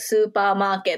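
put-on slow Japanese-accented speech.

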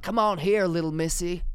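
put-on, high southern US old man accent. Retelling what an old man said boarding a cable car, in a southern american accent. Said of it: "I developed a Southern American accent".

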